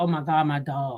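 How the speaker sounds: acted crying voice. Retelling driving away from work after leaving in tears: retelling own crying. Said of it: "I'm crying".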